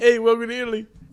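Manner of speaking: very high, put-on New York accent. Quoting the man who walked the speaker back, in a New York accent. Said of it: "I'm doing like New York".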